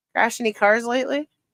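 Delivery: ordinary talk, nothing marked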